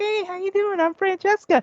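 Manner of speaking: sugary sweet, very high voice. Describing a game character's introduction, imitating Francesca being real sweet. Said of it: "after being real sweet".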